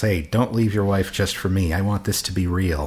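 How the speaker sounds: ordinary talk, nothing marked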